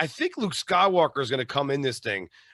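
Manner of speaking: ordinary talk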